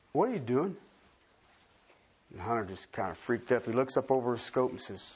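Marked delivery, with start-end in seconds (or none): 0.2-0.8 nice, mild, kindly, mellow, gentle bear voice. Telling a joke, voicing a bear speaking to a hunter: soft, mellow, gentle bear voice. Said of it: "a nice, soft, mellow, gentle voice said".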